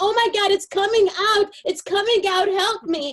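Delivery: put-on very high, shrill screaming fit. Retelling faking an eye popping out in class: imitating own past screaming. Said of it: "And I start to scream".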